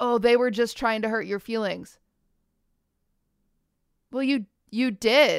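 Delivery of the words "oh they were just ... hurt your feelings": usual speaking voice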